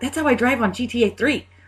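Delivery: mock excited burst. Retelling a reaction to a car spin in a movie, imitating excited speech. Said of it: "he got really excited".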